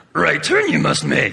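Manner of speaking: croaky, rough, creaky little voice. Describing GPS voice options, demonstrating the Yoda option in a Yoda voice.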